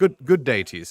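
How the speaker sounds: refined, sophisticated voice. Showing how they would greet someone formally, a speaker sounds sophisticated.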